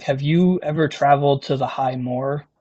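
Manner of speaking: low voice, drawn in close. Narrating a game, the speaker voices a man leaning closer to the listener, talking low. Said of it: "now he's talking like low".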